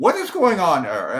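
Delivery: loud theatrical declaiming. Retelling how Joe Tessitore on their set reacted to his shirt; Joe Tessitore's Shakespearean voice. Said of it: "in his Shakespearean voice".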